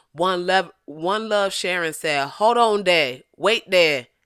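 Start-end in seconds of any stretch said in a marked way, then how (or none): 2.3-4.0 put-on Louisiana accent. Reading a commenter's message aloud on stream, in a louisiana accent. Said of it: "that sound very Louisiana right there".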